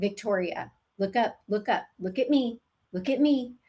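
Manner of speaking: firm and assertive, without harshness or meanness. Showing how to get victoria's attention, as with patients: firm but not mean. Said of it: "this is the voice I use with my patients".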